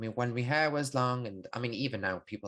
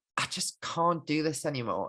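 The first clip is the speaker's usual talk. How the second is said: exhausted, worn-out voice full of pain; 4 semitones higher than usual. Retelling how another man voiced his realization: imitating an exhausted, pained tone. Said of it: "exhaustion and pain".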